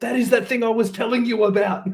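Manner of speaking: loud high shouting. Chasing a fleeing figure while calling to a companion: shouting to another character. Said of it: "I'm shouting to Anastasia".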